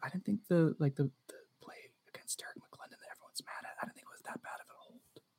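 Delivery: very quiet, hushed whisper. Admitting a controversial opinion about a holding call, whispering. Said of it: "I'm gonna say it in a whisper".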